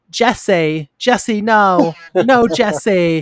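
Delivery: badly acted delivery. Retelling a warehouse scene after Freddy says her guy is dead, imitating an unconvincing line read. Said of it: "in like the most unconvincing, really poor voice".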